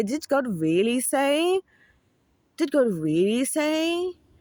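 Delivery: mock very slow, devilish, seductive, drawn-out high voice. Acting out the doubting voice in their head, imitating a seductive voice. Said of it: "it's like a seductive voice as well".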